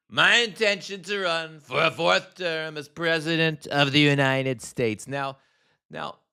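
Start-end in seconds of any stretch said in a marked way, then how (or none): 0.2-5.1 pitched-up, rally podium oratory delivery. Repeating a line from a played clip: Trump impression. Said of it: "do my Trump impression".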